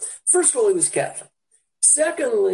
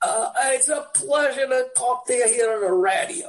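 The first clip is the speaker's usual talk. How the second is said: put-on heavy New York accent, laid on thick, pitched up; 5 semitones higher than usual. Retelling how a New Yorker sounded coming over the radio, in a thick New York accent. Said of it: "He had an incredibly thick accent".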